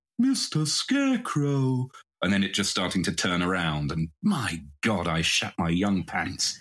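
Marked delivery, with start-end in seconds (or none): 0.2-1.9 put-on odd, high, childlike little boy voice. Recalling a boy in a barn at an episode's end calling out: weird little boy voice. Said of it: "the little boy with the weird voice just going".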